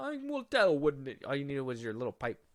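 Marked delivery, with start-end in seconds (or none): 0.0-1.2 very high-pitched, wizardly storybook character voice. Repeating the other speaker's line back, sounding like a Hogwarts character. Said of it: "you sounded like a Hogwarts character".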